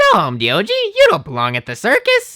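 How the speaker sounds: very high, loud, swooping voice. Showing the voice used for Milo in videos, very high-pitched Milo voice. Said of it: "that's kind of my Milo, my Milo voice. It's just very, very high pitched".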